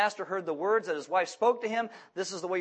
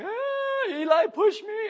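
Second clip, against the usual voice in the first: very high, very slow, shrill, wailing crying scream; 14 semitones higher, 6 dB louder than usual. Retelling how one of his sons came up after being pushed: imitating screaming and crying. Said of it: "And he's screaming and crying".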